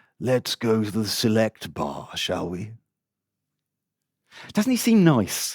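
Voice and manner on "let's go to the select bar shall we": gentle, mild, soft voice. Narrator reading the man's invitation to her from the novel, in a gentle voice. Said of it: "said Heidler in his gentle voice".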